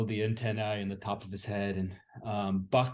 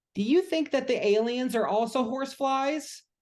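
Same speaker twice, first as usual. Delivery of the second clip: put-on very high, loud little kid voice; 6 dB louder than usual. Narrator voicing a three-year-old son who waddles up to you, Hank's little kid voice. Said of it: "his son Hank, who's like maybe 3 years old".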